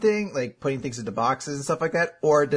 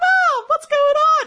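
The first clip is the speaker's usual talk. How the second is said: put-on squeaky, absurdly high, raised kid voice; 7 dB louder than usual. Imitating their 10-year-old self talking to Mom: absurdly high-pitched kid voice. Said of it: "had an absurdly high-pitched voice. Like".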